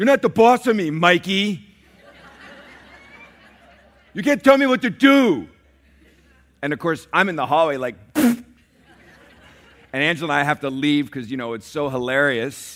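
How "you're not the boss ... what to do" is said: put-on loud, high little-boy voice, blurted. A parent retells youngest son Nathan blurting at his older brother: imitating Nathan's little boy voice. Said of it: "blurt out in his little boy voice".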